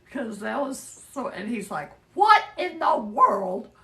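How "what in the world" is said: absolutely livid furious outburst, high and loud. Retelling how a dad reacted to finding a frog: imitating a furious dad. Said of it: "He was absolutely furious".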